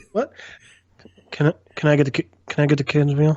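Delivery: put-on quiet voice. Acting out ordering a kids meal at a counter: quiet voice as Earn. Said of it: "You have to speak up".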